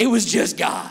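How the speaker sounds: put-on deep, low tough-guy voice. Preaching to a congregation, deliberately making the voice deep: put-on deep, tough voice. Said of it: "make my voice sound deep and really tough".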